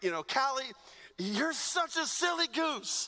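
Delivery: affectionate ribbing. A father retells how he teases callie; retelling playful teasing. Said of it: "I'm messing with her".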